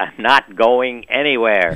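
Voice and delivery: loud bellow. Retelling how a dying mother answered her kids, bellowing out. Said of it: "the woman bellowed out".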